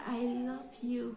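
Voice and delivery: small, slow put-on voice. Recounting how a man first told the speaker he loved them: retelling a small, slow 'I love you'.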